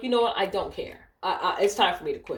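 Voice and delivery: ordinary talk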